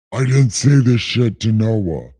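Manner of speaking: low voice from the heavens. Rereading a scripture passage, the speaker comments as God in a God voice. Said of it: "right now a God voice".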